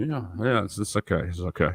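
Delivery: put-on soft, quiet, barely audible respectful murmur. Mimicking how Hendo talks, as opposed to his loud comments: imitating Hendo speaking softly. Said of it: "he roasts really loud in the comments, but when he talks, he's like".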